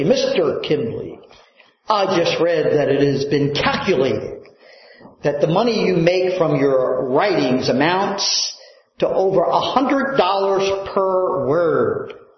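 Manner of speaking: ordinary talk, nothing marked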